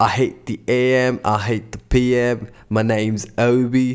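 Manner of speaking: slow, bad, fake, atrocious British accent. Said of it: "my British accent is atrocious".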